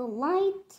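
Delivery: ordinary delivery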